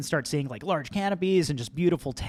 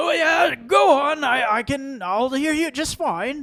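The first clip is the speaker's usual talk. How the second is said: put-on very high, loud old goblin voice; 11 semitones higher, 8 dB louder than usual. Narrating a scene to the players, the speaker voices a character, elderly goblin voice. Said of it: "is an elderly goblin".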